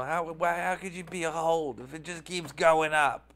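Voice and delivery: irate, indignant, angry voice. Speaker voicing critics of their hold rating: mock-angry hater voice. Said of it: "That's my angry hater voice".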